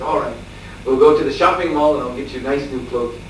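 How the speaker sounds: normal talking voice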